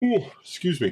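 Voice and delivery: very high-pitched voice spoken through a yawn. Talking about painting zombie figures after being up since three, yawning. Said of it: "you'll have to bear with me all the yawning".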